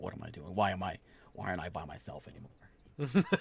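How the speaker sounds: muttering to himself, just loud enough to hear. A character shakes his head, muttering loud enough to be heard: muttering to himself. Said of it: "He mutters mutters to himself, but loud enough".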